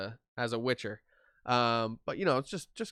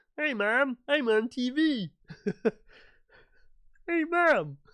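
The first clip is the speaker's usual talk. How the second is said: put-on puppet frog voice, higher and louder; 13 semitones higher, 8 dB louder than usual. A quick aside in the middle of an editing tutorial, in a Kermit the Frog voice. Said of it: "The Kermit the Frog voice".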